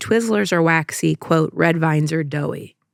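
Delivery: normal talking voice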